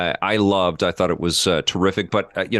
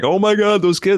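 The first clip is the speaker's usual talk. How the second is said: mock very high, terrified screaming; 12 semitones higher, 4 dB louder than usual. Recalling being scared at an early Jurassic Park screening: retelling own screaming. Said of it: "I was like literally screaming like".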